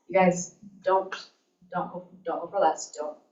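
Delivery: ordinary delivery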